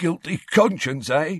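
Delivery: high, wheezing voice, squeezed out between breaths. Narrator reading Filch's taunt to Harry, Filch wheezing. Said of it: "he wheezed".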